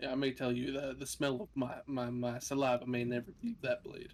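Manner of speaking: whispering in a put-on character voice. Voicing a character who whispers to another at her ear: whispering in character. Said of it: "I whisper to her in the back ear".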